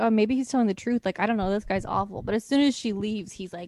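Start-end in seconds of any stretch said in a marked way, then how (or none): none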